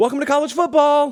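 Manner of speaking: very high-pitched shouting. Showing the speaker's approach this year, borrowing the Buc-ee's welcome: yelled greeting. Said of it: "I'm just inserting college football where Buc-ee's would be".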